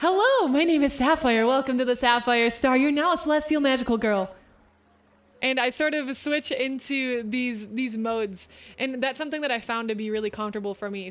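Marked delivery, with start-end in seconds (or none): 0.0-4.3 raised, reverb-drenched, echoing goddess persona voice. Speaker showing the in-character voice they sometimes play in: little reverb goddess voice. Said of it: "with like this little reverb goddess voice".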